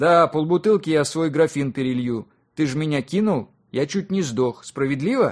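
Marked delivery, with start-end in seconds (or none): none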